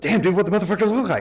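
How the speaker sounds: quick, rushed, rapid-fire words tumbling out. Retelling a phone call from Jake about what happened, imitating Jake's fast talk. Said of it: "Does he really talk like this?".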